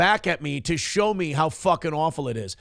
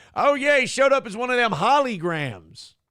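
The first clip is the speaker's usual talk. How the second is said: put-on dated, old-timer way of talking, pitched up; 6 semitones higher than usual. Poking fun at own phrasing, in a boomer voice. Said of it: "I sound like a boomer when I say".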